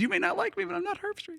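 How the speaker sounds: very high, creaky, rough shouted yell, acted out. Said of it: "he's screaming back at the fan".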